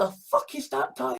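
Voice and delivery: plain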